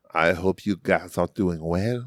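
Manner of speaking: put-on failed French accent. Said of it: "he's French, but I can't really do a French accent".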